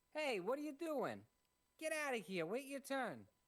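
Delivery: loud, very high, fake Boston accent. Voicing a character who tells a player to wait their turn: Boston accent. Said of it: "I have a fake Boston accent too".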